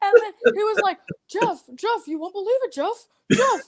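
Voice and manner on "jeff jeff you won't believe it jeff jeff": eager man's character voice. Retelling first meeting at a bar and grill: Fraser Smith impression. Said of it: "I could do Fraser Smith".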